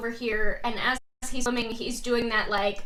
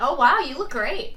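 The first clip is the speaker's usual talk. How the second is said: sounding surprised and caught off guard; 2 semitones higher, 4 dB louder than usual. Voicing a character greeting the contender who walks out: sounding surprised. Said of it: "You sound surprised".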